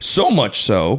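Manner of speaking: cracking voice, breaking mid-phrase. Chatting with another speaker, the speaker's voice suddenly cracks. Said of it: "I just had a voice crack".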